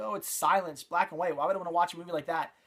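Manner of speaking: ordinary delivery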